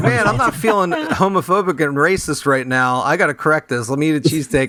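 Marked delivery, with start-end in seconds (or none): none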